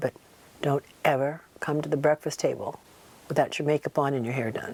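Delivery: mock-polite, quiet, gentle delivery. Speaker retells what a man once told them; retelling quiet, polite advice. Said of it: "telling me very quietly and very politely".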